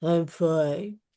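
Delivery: glum, unconvincing mumble, sounding like the opposite. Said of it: "You sound like".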